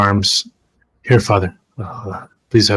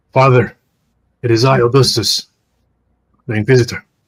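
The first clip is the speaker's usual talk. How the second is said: louder projecting voice, calling out; 2 semitones higher, 4 dB louder than usual. Voicing an inquisitor calling to a priest inside a church: projecting voice louder. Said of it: "project my voice a bit louder now".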